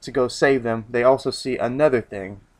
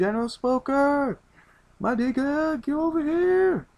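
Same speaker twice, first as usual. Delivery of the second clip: very high, slow hollering call. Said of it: "they're like".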